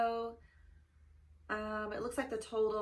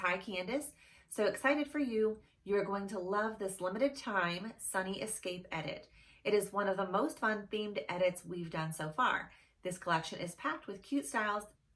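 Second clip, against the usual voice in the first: normal talking voice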